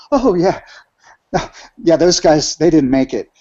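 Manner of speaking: acted nonchalant tone. Retelling what the driver said about a crashed vehicle: imitating a nonchalant driver. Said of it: "the driver nonchalantly is like".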